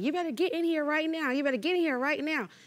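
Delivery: full-throated, shrill, high-pitched scream. Telling a story, the speaker acts out a man coming out the back door: retelling a scream. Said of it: "he's screaming like".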